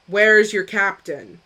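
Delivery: rough, grating voice. Retelling what he said in character, in a very rough, grating voice. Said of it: "in very rough, grating common".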